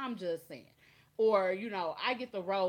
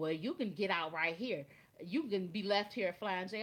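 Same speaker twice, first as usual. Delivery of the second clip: plain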